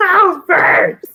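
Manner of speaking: high, loud, shocked yell.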